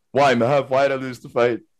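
put-on depressed voice. Retelling own reply to the coach after losing: imitating own depressed self. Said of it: "I'm all depressed after the game".

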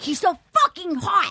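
acted, high, angry, worked-up furious outburst. Retelling what a friend said about someone, imitating a furious friend.

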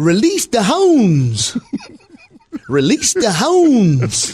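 put-on royal British accent. Speaker quotes a half-remembered movie line in a mock british royalty accent. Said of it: "I didn't realize you were a British royalty".

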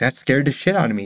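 plain

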